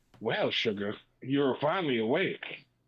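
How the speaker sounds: sweet yet dark voice. Describing a figure in the listener's room, voicing it in a sweet, dark Rogue voice. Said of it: "you hear a sweet, dark voice that goes".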